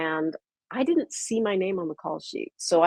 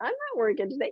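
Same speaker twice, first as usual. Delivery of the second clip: quiet, raised-pitch voice; 7 semitones higher, 6 dB quieter than usual. Telling how staff said they missed the studio pickup, quoting own past self. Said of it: "And I'm like".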